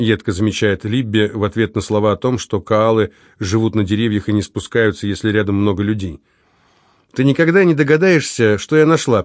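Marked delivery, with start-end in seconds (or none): 7.1-9.2 placating, conciliatory, higher pitch. A sister speaks up after her sibling's sharp remark, conciliatory. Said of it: "примирительно начинает сестра".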